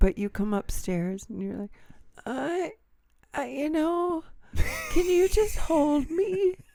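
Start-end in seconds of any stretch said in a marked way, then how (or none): 2.2-6.5 put-on achy pleading, much higher, slower. Imitating the listener coming upstairs feeling achy, imitating an achy pleading voice. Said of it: "And this is the voice".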